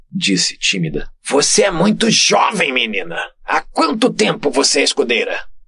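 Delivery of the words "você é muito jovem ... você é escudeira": patronizing, condescending, talking-down tone. The chief Zéfiro questions the young squire Lumi, condescending tone. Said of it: "num tom condescendente".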